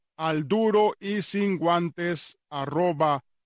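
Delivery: slow, careful, deliberate enunciation. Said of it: "Una vez más, todo en minúscula, todo juntico".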